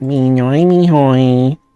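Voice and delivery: cartoon doodle-creature character voice. Answering a question about sounding like DoodleBob: DoodleBob voice. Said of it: "sound like Doodle Bob".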